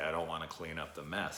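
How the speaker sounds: ordinary talk, nothing marked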